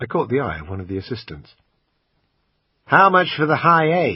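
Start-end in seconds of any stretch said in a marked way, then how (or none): 2.8-4.2 put-on, poor American accent, pitched up. Narrator asks an assistant the price, in his usual bad American accent. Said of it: "in my usual bad American accent".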